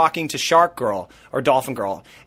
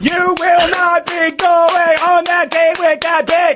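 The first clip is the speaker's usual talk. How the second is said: very high, shrill, loud threatening yell; 6 dB louder than usual. Predicting how a contestant reacts to a date: imitating Jasmine yelling. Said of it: "Spot on impression".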